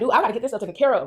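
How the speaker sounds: acted frantic panic, freaking out. Recounting talking to dad while upset, retelling freaking out. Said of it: "And I'm like freaking out".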